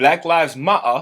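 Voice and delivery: put-on British accent, T's dropped. Retelling a meme about British people dropping T's: imitating a British accent. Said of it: "British people be like".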